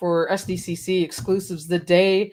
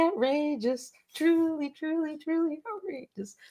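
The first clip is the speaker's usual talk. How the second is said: high-pitched voice pushed until it cracks. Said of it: "My voice is still cracking".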